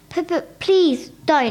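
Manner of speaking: stammering. Narrator reading Chloe's reply as Mother tries to rip her exercise book, stammering. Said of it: "stammered Chloe".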